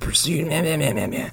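smarmy film noir narrator voiceover.

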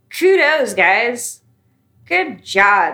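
very slow, heavy, dripping sarcasm. Criticising people in the industry for putting down their own players, say this sarcastically. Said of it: "said with all the sarcasm I can muster".

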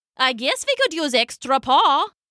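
ordinary talk

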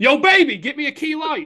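shrill, very high holler. Describing himself watching the game, calling to his wife: retelling yelling at wife. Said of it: "Yelling at my wife".

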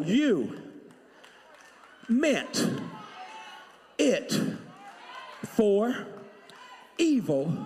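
very slow, deliberate, halting, word-by-word emphasis. Repeating a line for an audience who missed it, very slow. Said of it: "I'm gonna do it slow".

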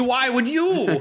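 high, slow mock bitterness.

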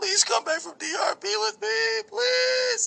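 acted out, very high, tearful crying voice. Recounting crying on the phone while begging her, imitating his own crying plea. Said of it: "I was crying on the phone and juggling like".

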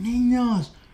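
acted-out, very high, shrill, furious angry yell. Recalling a woman yelling at noisy kids in class, imitating an angry yell. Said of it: "Así del enojo".

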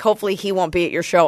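plain

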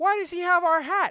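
booming, very loud, shrill, high, demanding tone. The speaker retells asking their mom something as a child, saying it very loudly. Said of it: "I'm saying this very loudly".

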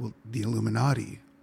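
mock-terrified, frightened whisper. Recalling a college girl's answer about who is coming after her, retelling a terrified whisper. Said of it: "whispered, because she was ... actually terrified".

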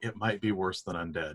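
solemn, serious, low and grave tone. Voicing a character who grabs a shoulder and warns: grave, serious warning. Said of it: "he gets this really serious look on his face".

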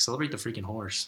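plain

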